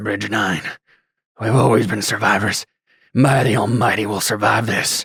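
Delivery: low-key, understated, said half to himself. Narrating a scene, a man staring down at his leg speaks to himself in a quiet voice. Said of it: "He just speaks in a quiet voice".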